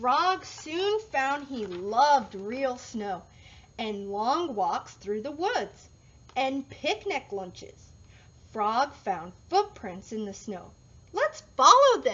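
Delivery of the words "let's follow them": said with a smile. Narrator reads Bear speaking to Frog in the snow, smiling. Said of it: "smiled Bear".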